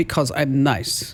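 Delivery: put-on Italian accent. Host retelling what a man accused of faked peak photos says, italian accent. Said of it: "That's an Italian accent".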